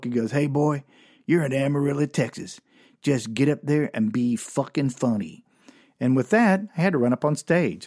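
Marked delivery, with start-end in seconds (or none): 0.3-5.4 put-on mock-drunk man's voice. A comedian retells the man who sent him onstage, imitating a whiskey-drunk man. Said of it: "whiskey drunk".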